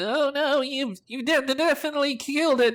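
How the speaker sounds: very high, squeaky, chattering gnome voice. Storyteller voicing a gnome replying to a player, high-pitched gnome voice. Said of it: "begins to chatter in a high-pitched voice".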